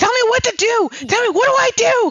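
very high, loud, desperate screaming. Retelling a story, the speaker acts out a man screaming for help: retelling a scream. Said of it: "So he starts screaming".

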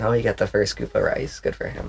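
breathy, dry, sarcastic faint praise. Commenting on a story with another speaker: sarcastic. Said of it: "you're so sarcastic".

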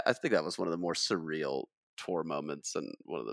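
ordinary talk

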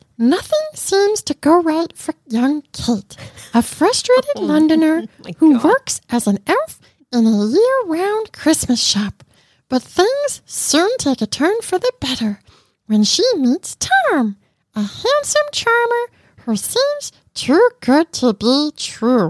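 put-on high, squeaky, bouncy, sing-song childlike puppet monster voice. Apologizing to the listening audience, then reading aloud in an Elmo voice. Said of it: "this needs to be done in Elmo".

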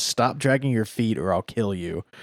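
put-on deadpan, menacing delivery. Retelling a character's line to a reluctant teammate: imitating a deadpan threat.

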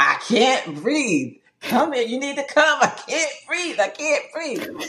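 play-acted, very high, swooping yell. Retelling yelling out a hospital room door: retelling a yell for help. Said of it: "yelling out the door saying".

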